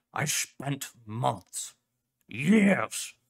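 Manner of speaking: loud, very slow, weighty delivery. Narrator voicing the dog professor arguing with Clef: Professor Crow retorting. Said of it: "You want a suit? The dog asked. Are you sure? [name] is gonna need it, [name] said. Especially if the Coalition starts stepping up their efforts. Professor Kane Pathos [name] gave a low, angry growl. He slapped his front paw".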